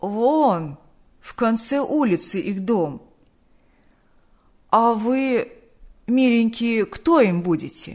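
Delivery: put-on husky, croaky, hoarse old-woman voice. Narrating a story, an old woman answers visitors asking about relatives, hoarse voice. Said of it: "хриплым голосом сказала".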